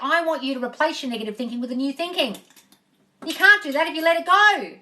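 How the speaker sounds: loud, ranting shout. Addressing listeners directly: shouting. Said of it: "Sorry that I'm shouting".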